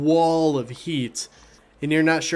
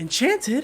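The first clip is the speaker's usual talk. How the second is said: surprised gasp, higher; 10 semitones higher than usual. Voicing a human woman hearing the sickle is enchanted: gasping in surprise. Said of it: "The woman gasps and just goes".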